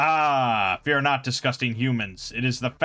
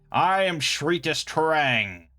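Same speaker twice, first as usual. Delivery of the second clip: hissed creature voice, very slow, drawn out, menacing; 2 semitones higher than usual. A menacing spider-like creature approaches from the shadows: hissing Shritus Terang voice.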